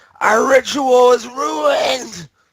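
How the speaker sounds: very high, very slow, drawn-out furious anguished scream. Voicing a horrified, angry druid running in: screaming in character. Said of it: "Starts screaming".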